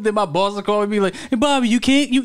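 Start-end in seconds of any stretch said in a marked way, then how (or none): 1.1-2.2 put-on stuttering voice, higher. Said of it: "he sound like, um, Hank Hill".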